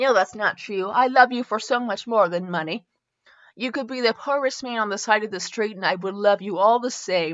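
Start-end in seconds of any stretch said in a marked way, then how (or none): none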